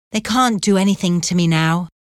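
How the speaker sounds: usual speaking voice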